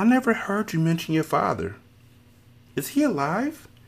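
sweet, guileless, innocent tone in a very high voice. A woman asks the narrator a question: innocent voice. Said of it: "she would ask in an innocent voice".

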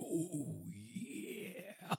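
put-on whispered in a Japanese accent. Recapping a game scene where Bart cries out, Japanese-accented Bart voice. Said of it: "So it's a Japanese accented".

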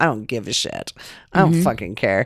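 mock chuckling, low, careless and dismissive laughing tone. Telling about an argument on set, quoting a man there, retelling him laughing. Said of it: "the guy's sitting there laughing".

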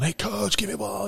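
hoarse acted holler. Retelling how they yelled at a coach for a baseball: retelling own yell. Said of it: "just yelling".

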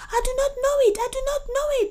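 desperate, frantic, shrill, very high-pitched and rushed. A man questioned by the vizier answers, frantic answer. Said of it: "he answered frantically".

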